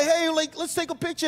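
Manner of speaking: put-on excited screaming. Imitating a youth greeter welcoming people at the door: imitating someone screaming a greeting. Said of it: "why are you screaming at me".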